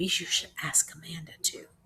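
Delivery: whispering. Narrating a story, reading a character's whispered line, whispered.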